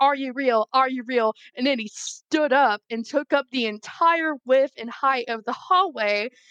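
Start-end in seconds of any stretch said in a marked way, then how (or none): 0.0-1.3 play-acted, half-screamed mild yell. Retelling backing away from a figure in a corridor: imitating own scream. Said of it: "just screaming at him like".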